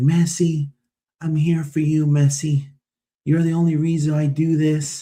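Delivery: acted weepy, emotional, high, tearful pleading tone. Retelling a journalist meeting messi in the tunnel: imitating a woman crying. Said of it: "crying, dude".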